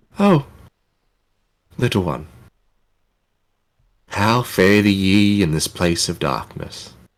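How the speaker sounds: faint, far-off half-whisper. Narrating to players, a voice heard on waking speaks: faint half-whisper. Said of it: "you hear a faint whisper on the wind".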